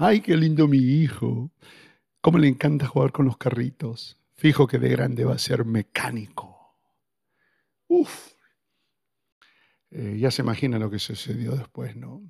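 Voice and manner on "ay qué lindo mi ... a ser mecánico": loud, mocking tone with a touch of sarcasm. Parent retelling a past comment about their son playing with cars, retelling a sarcastic remark. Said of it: "Indudablemente añadiéndole algo de sarcasmo".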